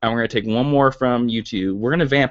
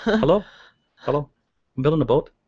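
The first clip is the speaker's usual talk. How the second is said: learned Irish accent; 3 semitones higher than usual. Demonstrating the accent learned for a tv movie role: irish accent. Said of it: "but I had to learn this accent".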